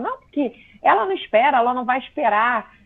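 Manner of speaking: worked-up, nervous, fretting tone. Retelling what an anxious mother said in a crowded waiting room: imitating a nervous mother. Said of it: "ela toda nervosa".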